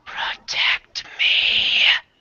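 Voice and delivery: eerie, spooky, creepy whisper. A game master voices a whispering halfling corpse, in a creepy whisper. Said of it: "says in a really creepy voice".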